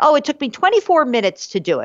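high-pitched, fast, casual, boastful tone.

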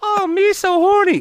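put-on squeaky, very high-pitched, childlike little kid voice. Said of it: "this little kid voice".

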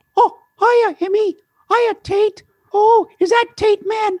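very high, little cartoon mouse voice. Performing for children, greets Emmy and Tate in a Mickey Mouse voice. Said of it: "Hey, Mickey, say hi".

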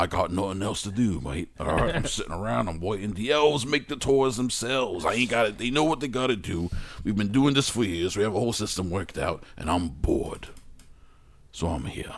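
put-on Australian accent character voice. Talking to a co-host in character as Australian Santa. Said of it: "Fucking Australian Santa".

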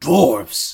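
put-on monster orc voice, calling out. Voicing an orc who hears of the dwarves: orc voice. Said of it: "you hear the orc go".

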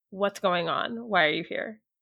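secretive, hushed stage whisper. A player's character shakes hands with her and asks unseen, half-whispering. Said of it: "And I just kind of whisper".

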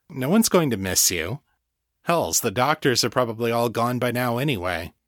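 ordinary delivery, nothing marked

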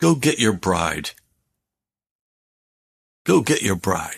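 put-on disgusted tone. Recounting a prayer, the speaker retells the answer he heard: retelling in a disgusted voice. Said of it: "in a kind of a disgusted voice".

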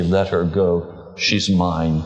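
slow, deliberate, unhurried words, each landing slowly. Retelling the Lord's answer to the plea: retelling quiet words. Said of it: "Very quietly".

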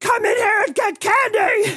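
very high, loud, angry voice. Retelling how the candy shop ladies call the kids in: imitating an angry shout. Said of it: "angry expression".

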